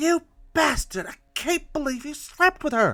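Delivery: very high, ghostly, unearthly shriek. A game master voices an unearthly woman as the players step in: unearthly woman's scream. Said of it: "the unearthly voice of a woman fills your ears, almost like a scream".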